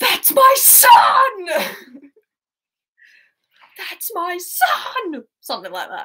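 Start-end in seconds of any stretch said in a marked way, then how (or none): 0.0-5.2 very slow, high-pitched, drawn-out, stretched yell. Reading a quiz quote the way the film does it: yelling a film line. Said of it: "I'll just do it how they do it in the film".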